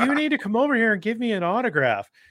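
mock very high kid voice, growing angrier and angrier. Retelling kids demanding an autograph at practice: imitating angry kids. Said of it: "angrier and angrier".

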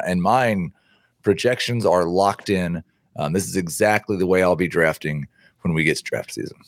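ordinary delivery

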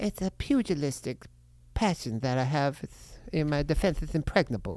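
boxer voice, lisping through whole line. Doing an impression after being asked: Mike Tyson impression. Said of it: "I do, uh, Mike Tyson".

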